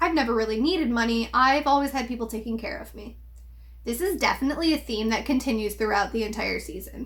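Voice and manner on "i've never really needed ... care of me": ordinary talk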